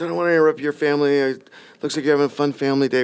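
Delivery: acted voice on the edge of crying. Retelling a stranger who came up to thank him: imitating someone almost in tears. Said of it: "she's almost in ter-, tears".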